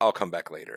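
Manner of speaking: ordinary delivery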